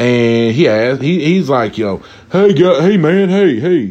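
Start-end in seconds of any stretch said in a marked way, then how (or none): 1.8-3.8 put-on scruffy, raggedy old man calling out. Retelling how a customer greeted them at the store: imitating an old raggedy dude. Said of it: "this old raggedy dude".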